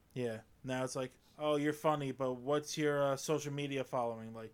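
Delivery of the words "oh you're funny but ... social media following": ordinary talk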